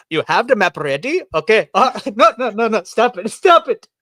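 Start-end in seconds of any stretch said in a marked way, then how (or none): 0.1-1.2 put-on Korean accent. Speaker asking another person whether the map is ready, in a put-on Korean accent. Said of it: "just imagine this is a Korean accent".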